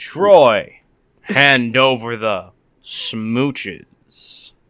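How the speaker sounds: very low, seductive come-on voice. Doing a Robo Knight bit with a friend: seductive Robo Knight voice. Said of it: "that sounds more like fucking seductive".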